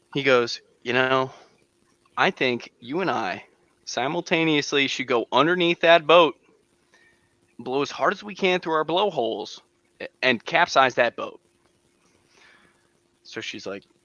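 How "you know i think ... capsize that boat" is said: ordinary delivery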